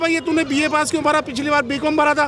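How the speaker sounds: usual speaking voice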